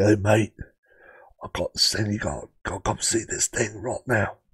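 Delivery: mock pushy salesman voice, sinister edge. Recalling a man who always phoned urging him to come see something, pushy salesman impression. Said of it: "a cross between a used car salesman and an assassin".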